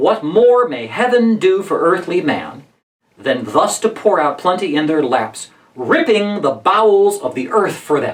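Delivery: rhythm changes sharply on the word "ripping". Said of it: "You see how the rhythm changes there".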